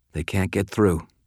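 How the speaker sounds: ordinary delivery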